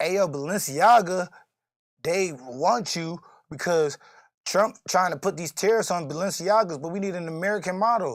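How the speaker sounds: ordinary talk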